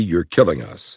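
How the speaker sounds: ordinary talk, nothing marked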